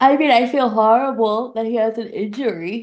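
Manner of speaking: words spoken through a yawn. Asked how she feels about a cast member's injury, answering while yawning. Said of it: "sorry for yawning during that".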